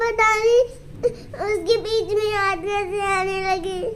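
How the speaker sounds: soft, tearful voice, crying while talking.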